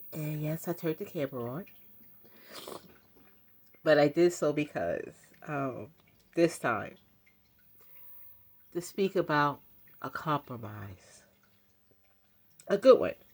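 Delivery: speaking through tears, crying while talking. Speaker on camera explaining why they turned it on, crying while talking. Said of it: "Yeah, I'm crying".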